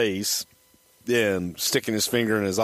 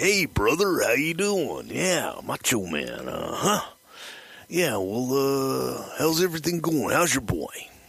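swooping sing-song pitch, "well" stretched out; 4 semitones higher than usual. Retelling a payphone call to Rick Rude: Randy Savage impression. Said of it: "Randy calls Rick Rude. And he's like".

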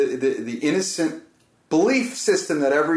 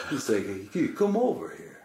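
slow, drawn-out, put-on Greek accent; 7 dB quieter than usual. Retelling what a man said, in a Greek accent. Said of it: "he had a Greek accent".

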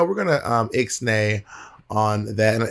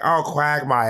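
put-on cartoon neighbor voice, higher; 5 semitones higher than usual. Contrasting two cartoon voices: imitating Cleveland. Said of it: "Whereas Cleveland, like".

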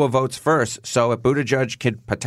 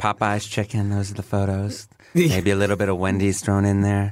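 mock suggestive, nasty-sounding tone, lower pitch; 4 semitones lower than usual. Joking about which photos get remembered: sounding nasty, pretend dirty. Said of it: "how you make that sound nasty".

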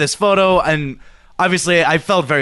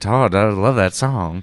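put-on sexy voice, southern twang, lower; 7 semitones lower than usual. Performing a line on request, close to the mic: put-on sexy voice, southern twang. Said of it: "I'll get my sexy voice going".

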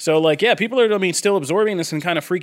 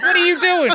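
put-on panicked yell, higher pitch; 12 semitones higher than usual. Retelling a nightmare of yelling at someone crossing a stormy ocean: imitating own yelling.

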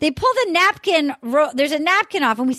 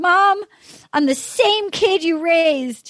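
put-on choked-up, pleading voice; 2 semitones higher than usual. Retelling what a contestant said to his mom: imitating Trey choked up. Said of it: "Trey's super choked up".

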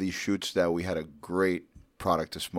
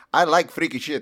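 very high, loud put-on Eastern European accent; 10 semitones higher, 7 dB louder than usual. Retelling a woman's surprise remark, the speaker uses her Eastern European accent. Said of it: "in her, I don't know, Eastern European accent".

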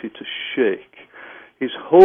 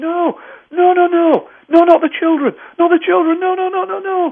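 very high shrieking, screaming cries. Retelling a client screaming during a hypnosis session: imitating someone screaming. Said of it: "he was screaming".

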